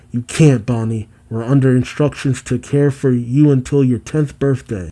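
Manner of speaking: ordinary talk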